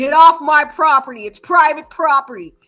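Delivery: hostile, aggressive, very loud barking. Retelling a father's words to a reporter: imitating Brian's dad, aggressive. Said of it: "a little bit of aggression in that voice".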